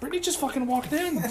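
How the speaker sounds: soft, mocking, high-pitched voice.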